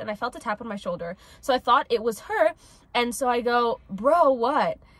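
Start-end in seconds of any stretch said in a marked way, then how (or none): 3.9-4.8 play-acted, really loud shouted yell. Retelling answering a tap on the shoulder: imitating own loud yell. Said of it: "Really loud".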